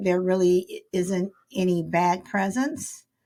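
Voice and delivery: ordinary talk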